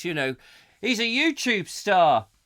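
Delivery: play-acted, loud, announcing tone. Recounting a companion boasting to the checkout girl, retelling a loud remark. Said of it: "he sort of said in a loud voice".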